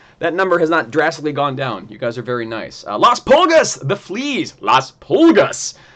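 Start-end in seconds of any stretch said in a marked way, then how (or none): 3.0-5.7 loud, put-on announcer-style voice. Reading out a team name to the audience: put-on announcer voice. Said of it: "in my announcer voice".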